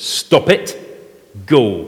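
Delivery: play-acted stern, firm, commanding voice. Preaching, retelling a command to a possessed man, in a put-on stern voice. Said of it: "in a stern voice says".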